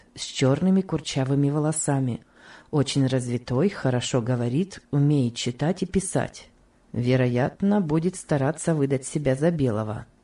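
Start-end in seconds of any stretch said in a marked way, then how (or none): none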